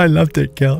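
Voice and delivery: mock-tearful, crying voice. Retelling her reaction after the old couch was thrown out, imitating her crying. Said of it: "And she's in tears".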